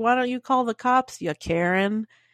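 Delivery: normal talking voice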